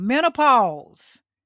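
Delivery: loud, slow, drawn-out "menopause". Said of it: "I'm gonna say it out loud".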